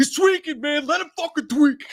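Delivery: high, loud, belted yell. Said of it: "He's like".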